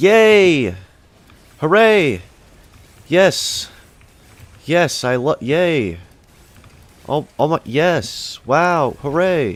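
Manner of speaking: fake cheering, very high, loud and drawn out. Reacting to getting an unwanted item: sarcastic fake cheering. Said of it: "This is sarcasm".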